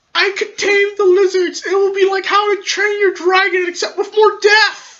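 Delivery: very high, oddly squeaky delivery. Joking about taming lizards with the group: unusually high voice. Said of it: "My voice is really high for some reason".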